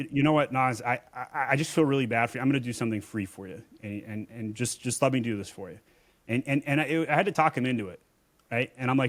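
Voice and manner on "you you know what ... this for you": usual speaking voice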